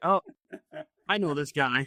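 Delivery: ordinary talk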